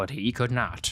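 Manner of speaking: condescending, patronizing film narrator voice. Imagining a narrator of one's life, acting out the put-on condescending Morgan Freeman narration. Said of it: "Morgan would condescendingly say".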